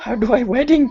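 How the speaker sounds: whispered in character. Voicing a character asking the priest how weddings work: whispering in character.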